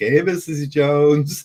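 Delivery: put-on, very high, loud, fake-cheery happy tone. Retelling sarcastically greeting a neighbor while riding by: put-on happy funny tone. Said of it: "And I use the funny tone, the happy, funny tone".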